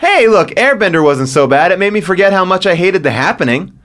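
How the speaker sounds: ordinary talk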